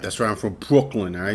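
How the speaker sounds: tough, defensive Brooklyn attitude with a little put-on angst. Joking back after being teased for announcing Brooklyn roots: saying it with put-on angst. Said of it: "You gotta say it like that with a little bit of, little angst to it".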